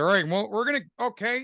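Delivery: put-on very high-pitched dumb-kid voice. Showing how he voiced a young Han Solo as Bob Falfa. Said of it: "I just kinda talked like this".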